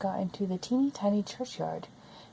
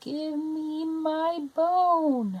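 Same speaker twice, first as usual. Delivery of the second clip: tiny, high, very slow little voice; 7 semitones higher than usual. Narrator reading a story, a voice from the cupboard, teeny tiny voice. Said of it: "a teeny tiny voice".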